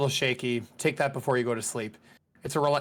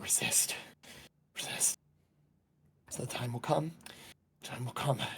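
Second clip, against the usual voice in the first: muttering put-on voice, much quieter; 11 dB quieter than usual. Narrating a scene, as you walk up, Zarin is muttering under his breath. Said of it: "you could very faintly hear him muttering under".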